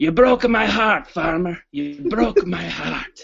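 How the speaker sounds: close, hushed half-whisper right in the ear. Retelling a half-whisper into someone's ear while leaving the office: retelling a half-whisper. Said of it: "and I whisper in his ear".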